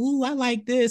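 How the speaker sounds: put-on very high kid's yell. Describing a kid walking around touching things: imitating a kid yelling. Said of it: "the kid be walking around yelling like".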